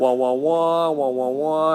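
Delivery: muffled, droning wah-wah like a muted horn. Joking about fading out after long talking, in a Charlie Brown teacher voice. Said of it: "the Charlie Brown teacher voice".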